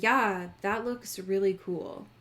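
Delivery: totally level, flat, dead, toneless monotone. Retelling how Matt reacted to a bracelet; Matt's monotone voice. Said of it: "in the most monotone voice I've ever heard".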